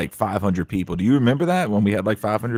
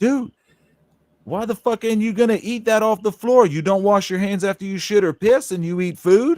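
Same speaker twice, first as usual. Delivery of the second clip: play-acted, very high, shrill, high-pitched holler; 12 semitones higher than usual. Retelling how he called out a coworker across the room: retelling a yell. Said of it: "And I yelled".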